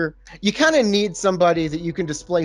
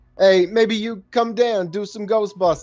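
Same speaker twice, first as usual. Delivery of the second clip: put-on New York accent, pitched high; 5 semitones higher than usual. Retelling a movie scene by quoting a character: new york accent. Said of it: "I don't know why I'm continuing this New York accent".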